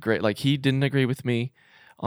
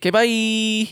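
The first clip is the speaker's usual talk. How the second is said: "bye" pitched very high and dragged out; 11 semitones higher, 5 dB louder than usual. Saying goodbye as another speaker leaves: Boost Mobile creature voice. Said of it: "I sounded like that, uh, Boost Mobile creature".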